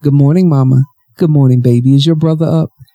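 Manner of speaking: usual speaking voice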